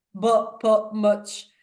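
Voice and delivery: put-on real, full, broad West Yorkshire accent. Recalling how they used to speak when first meeting: imitating own past west yorkshire accent. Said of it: "I used to speak real West Yorkshire English".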